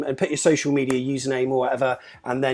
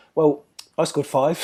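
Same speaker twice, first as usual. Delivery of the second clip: mock smug, boastful put-on voice. Retelling a father's boast to a footballer: imitating someone smug. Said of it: "my dad smugly said".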